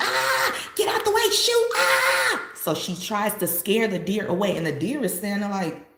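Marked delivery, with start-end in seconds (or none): 0.0-2.5 mock very high, screeching, drawn-out scream. Retelling a scene where a lady scares deer away: imitating someone yelling and screaming. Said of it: "come yelling, screaming".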